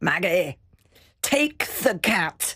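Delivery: put-on speaking with a Scottish accent. Retelling a phone call about a cat: imitating Alex's Scottish voice. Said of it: "this Scottish voice from behind".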